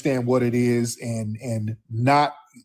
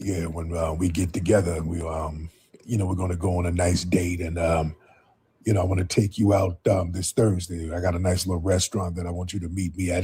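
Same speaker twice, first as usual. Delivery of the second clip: deep, smooth, seductive sweet-talking voice; 6 semitones lower, 4 dB quieter than usual. Speaker telling ladies about a dude who catfishes them; imitating a deep smooth voice. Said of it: "His voice is all deep and and smooth".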